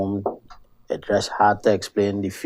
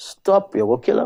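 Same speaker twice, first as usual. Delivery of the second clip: put-on shrill shouted cry, very high and loud; 11 semitones higher than usual. Retelling lying on the ground as a car came, imitating someone shouting. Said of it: "a loud voice shout out".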